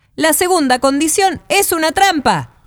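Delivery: indignant tone, very high pitch. Race organizers who celebrated early object to a condition, protesting.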